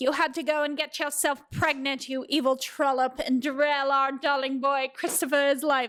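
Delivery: awful, terrible fake British accent. Retelling a scene, voicing Straub and Francine blaming Lorelai, in an awful British accent. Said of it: "I don't know why I'm giving them an awful accent".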